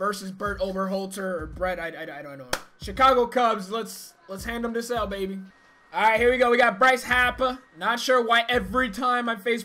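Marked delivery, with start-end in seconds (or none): 6.8-7.6 put-on Boston accent on a name. Facing a player, saying his name as always: Boston accent. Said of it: "I have to say it in a Boston accent".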